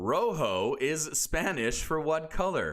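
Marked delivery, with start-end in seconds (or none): 0.0-0.7 heavy English accent, thoroughly anglicized, drawn-out "rojo". Quiz host reading a spanish word: heavy english accent on rojo. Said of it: "I tried to say that with the most English accent possible".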